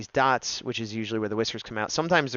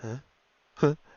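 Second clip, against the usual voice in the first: mock drowsy cat voice, higher; 4 semitones higher than usual. Imitating a cat that was dozing: imitating a drowsy cat. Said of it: "this is my impression of her a minute ago".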